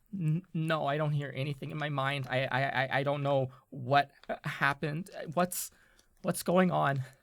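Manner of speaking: trembling character voice. Voicing Mira as she reaches out to you, in a shaking voice. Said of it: "she is shaking".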